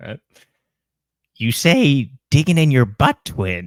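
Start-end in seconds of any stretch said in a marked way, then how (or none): 1.4-3.7 very loud, high-pitched, belted villain voice. Impression of a modern, chronically online version, Joker voice. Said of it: "this is an impression of the Joker".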